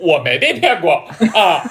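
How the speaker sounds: put-on loud, laughing voice. Mocking a man who scorns knowledge by quoting his claim; retelling a loud declaration. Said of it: "并且大声的说出".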